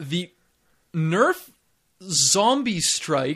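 very slow, deliberate, careful, clearly enunciated speech. Customer repeats a product name for a worker who misheard; clear and deliberate. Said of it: "when i say it really clearly and deliberately".

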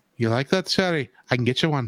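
put-on low-pitched Irish accent. Playing Gambit while addressing Shari: Gambit voice in an Irish accent. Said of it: "I went with my Irish voice".

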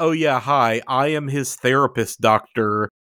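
ordinary talk

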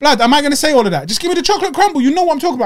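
furious, fast, high, spit-talking enraged rant. Speaker retells ordering from a menu, still angry; enraged ranting. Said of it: "I'm spit talking because I'm enraged".

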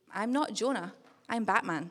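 mock deadpan, flat and expressionless. Retelling what a boy said when asked why, on the way to school; retelling a deadpan reply. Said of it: "look at me deadpan in the eye and say".

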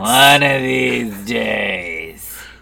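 low, slow drawl, "days" stretched. Quoting a Monsters, Inc. character with friends: Roz voice. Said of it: "it was that voice".

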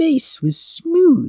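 ordinary delivery, nothing marked

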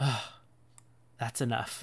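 soft, sighing, exasperated voice. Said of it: "you can almost hear the exasperation".

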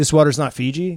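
usual speaking voice

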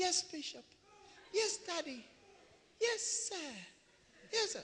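meek, deferential, very high, slow, put-on humble voice. Imitating how people answer when they speak to him: mimicking a humble voice. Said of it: "they have a very humble voice".

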